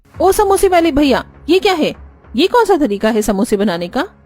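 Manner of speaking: irate, high-pitched, angry scolding tone. A customer confronts the samosa seller, holding a chili, loud shouting. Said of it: "madam पहले धीरे बोलिए".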